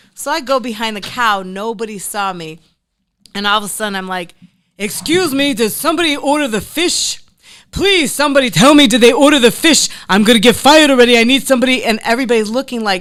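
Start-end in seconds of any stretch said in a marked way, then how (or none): 4.8-11.9 very loud, high, put-on elderly man voice.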